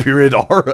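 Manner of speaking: normal talking voice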